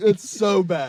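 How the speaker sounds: tearful. Reacting to a disgusting taste while another speaker says you're crying: crying. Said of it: "He's crying".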